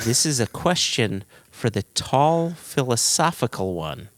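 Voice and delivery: ordinary delivery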